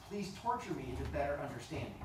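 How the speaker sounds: normal talking voice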